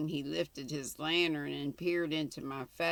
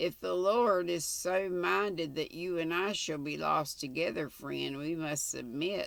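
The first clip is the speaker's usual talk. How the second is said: plain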